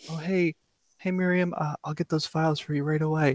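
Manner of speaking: very quiet, soft, polite, very professional manner. Showing how the speaker talks at the office, in a very quiet professional voice. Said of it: "I have this very quiet, very professional voice".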